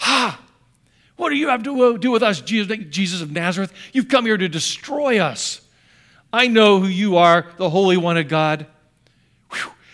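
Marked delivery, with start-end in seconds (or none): 0.0-8.6 mock shrieking possessed man outcry. Telling the story of Jesus, the speaker acts out a man who shrieks at him. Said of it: "a guy who shrieks".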